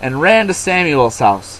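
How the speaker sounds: ordinary delivery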